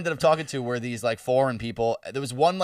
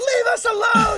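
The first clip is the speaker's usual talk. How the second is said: shrill, very high, loud screaming voice; 6 dB louder than usual. Retelling a man in a ball gown screaming at the cops: imitating someone screaming. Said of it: "just screaming at the cops like".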